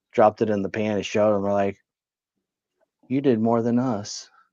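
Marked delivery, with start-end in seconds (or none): 3.1-4.3 play-acted mournful, little, puppyish sad tone. Retelling what the others said after seeing the result: imitating a sad puppy-dog tone. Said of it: "they said it with such a, such a pup-, puppy dog, sad eyes".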